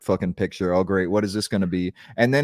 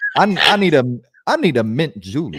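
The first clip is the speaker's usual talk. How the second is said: Southern dandy voice, higher, louder; 5 semitones higher, 6 dB louder than usual. Describing how a man talks by acting him out: Calvin Candie impression. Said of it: "Like he talks like a like".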